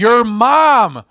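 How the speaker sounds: put-on loud, high yelling, "mom" stretched out. Retelling a crowd member's heckle at the mic: imitating a heckler screaming. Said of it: "he screams out".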